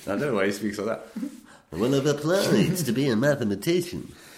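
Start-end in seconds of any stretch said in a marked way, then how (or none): 1.7-4.1 put-on Greek-American accent, pitched up. Imitating how a professor at MIT talks, imitating a Greek-American accent. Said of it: "a Greek living in America would sound like that".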